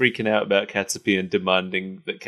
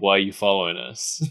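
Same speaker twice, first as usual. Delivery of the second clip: ordinary talk, nothing marked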